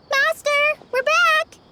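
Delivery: very high-pitched, loud, calling shout. Calling out to the master on arriving back: shouting. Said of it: "You don't have to shout".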